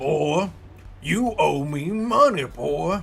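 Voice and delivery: put-on cowboy voice. Not having done it in a while, trying out the cowboy voice. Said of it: "do the cowboy voice".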